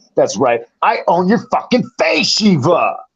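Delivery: high, salesy infomercial announcer delivery. During a bit, a speaker taunts Shiva in an infomercial announcer voice. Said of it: "you got that infomercial voice".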